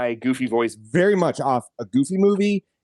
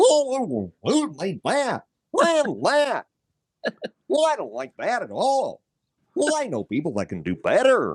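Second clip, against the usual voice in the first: put-on cartoon dog voice, higher; 7 semitones higher than usual. Acting out a complaint at Disney after being asked: Goofy voice. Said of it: "You gotta do it in the goofy voice".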